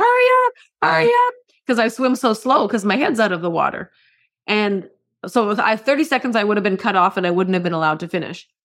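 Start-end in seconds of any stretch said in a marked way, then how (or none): 0.0-1.3 frantic, shrill, very high screaming. Retelling a triathlon where people were screaming at the slow swimmer: imitating people screaming. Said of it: "They were screaming at me".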